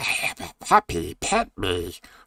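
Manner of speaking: eerie, very slow, swooping put-on monster voice. Voicing an eldritch cat-like octopus wanting to get close to humans: creepy creature voice. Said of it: "Yes, I just did a voice. That's not creepy".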